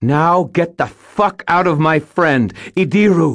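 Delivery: ringing, furious, very high-pitched cry. A woman takes a deep breath and orders something out of her friend, ringing and furious. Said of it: "spoke in a ringing, furious voice".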